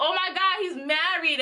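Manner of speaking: play-acted slow, drawn-out, subdued, held-back scream. Retelling finding out at her mother's house: retelling her own scream. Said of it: "I started screaming".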